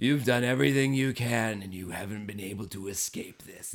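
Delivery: sinister, ominous, creepy zombie voice. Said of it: "such ominous, creepy".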